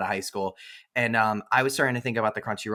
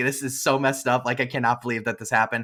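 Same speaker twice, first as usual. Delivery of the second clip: ordinary delivery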